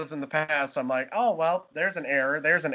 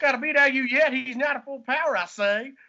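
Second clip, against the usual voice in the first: laid-on, very high-pitched put-on southern drawl; 9 semitones higher than usual. [name], being fed lines by the group, speaks in a Foghorn Leghorn voice. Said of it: "It's just Foghorn Leghorn".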